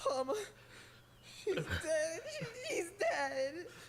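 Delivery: slow, sobbing, blubbering ugly cry. Grieving aloud over someone's death: ugly crying. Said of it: "ugly crying A S M R".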